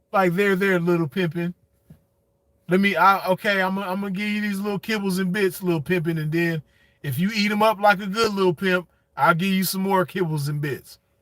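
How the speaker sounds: ordinary delivery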